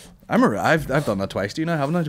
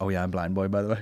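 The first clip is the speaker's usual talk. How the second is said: normal talking voice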